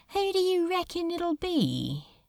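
offhand, casual and nonchalant, pitched very high. Standing hand in hand before a spiraling whirlpool, one asks the other, nonchalant. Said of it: "asked Crowley nonchalantly".

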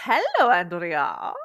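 cartoon witch voice. Co-host answering her co-host's hello, in a cartoon witch accent. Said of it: "what accent was that?".

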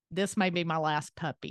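ordinary talk

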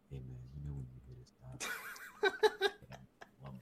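soft close-mic ASMR whispered murmur. Retelling own earlier line, close to the mic: imitating ASMR whisper. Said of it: "so I'm in my A S M R mode".

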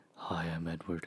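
very quiet, glum, depressed murmur. Comparing Twilight vampire impressions, doing a mock-depressed Robert Pattinson impression. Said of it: "kind of like depressed".

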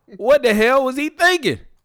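shrill, very high, loud blurted outburst. Reading out what Chris Rock said at an awards show, in a horrible Chris Rock impersonation. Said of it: "That was a horrible Chris Rock impersonation".

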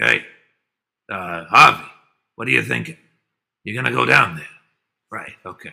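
fast, rough, creaky, off-the-cuff patter. Imitating God's voice from a cartoon: Peter Falk voice. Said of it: "There is a Falk-esque tonation in God's voice".

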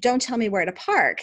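heated, angry, sharp-sounding delivery. Retelling how a friend reacted to parking advice: imitating an angry reply. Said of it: "she got all angry".

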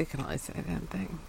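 very soft, quiet mumbling as if to oneself. Repeating the other speaker's line as an impression: Craig impression, mumbling. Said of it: "That's my Craig impression".

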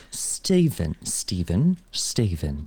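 attempted English accent. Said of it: "how you say Stephen in English accent".

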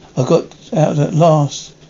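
ordinary delivery

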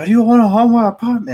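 very high, shrill, loud angry yell. Retelling a telemarketer's phone call: imitating someone screaming. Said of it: "screaming at me".

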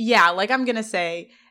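ordinary delivery

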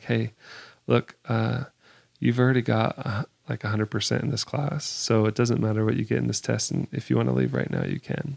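secretive, hushed, confidential stage whisper. Retelling what he said at the front of the class: imitating someone half-whispering. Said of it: "he's kinda whispering to me".

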